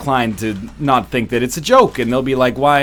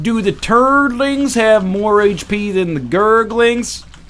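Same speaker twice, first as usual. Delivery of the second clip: put-on Southern United States accent, pitched up; 9 semitones higher than usual. Describing a game's question, the speaker takes on a put-on Southern US accent. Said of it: "taking on a traditionally southern United States uh, affectation for that".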